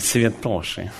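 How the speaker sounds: mock scornful jeer on святоши. Quoting how he mocked the Pharisees, acting out mockery on святоши. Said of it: "Он над ними издевался. Он такой".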